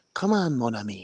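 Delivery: put-on heavy, over-the-top Cajun French accent. Imitating Gambit's line from the original Marvel versus Capcom: exaggerated Gambit voice. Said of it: "he had a very exaggerated".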